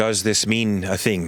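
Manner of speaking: blank, flat monk voice. Voicing a character who looks blankly at the players: blank Gith time monk voice. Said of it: "she just looks at you blankly and she says".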